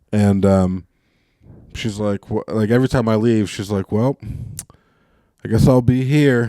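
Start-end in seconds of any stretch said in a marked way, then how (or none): 3.9-6.5 put-on passive-aggressive voice. Retelling what the speaker's grandmother says at every goodbye, imitating passive-aggressive grandma. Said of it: "passive aggressive shit that she says".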